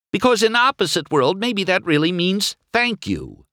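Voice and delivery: exasperated, frustrated voice rising very high. Narrator reading a character going on with his complaint, voice rising in frustration. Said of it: "his voice rising in frustration".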